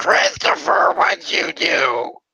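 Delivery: high, whiny, raspy voice. Recalling a parent, the speaker imitates her whiny, raspy voice. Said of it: "in her like whiny, raspy voice".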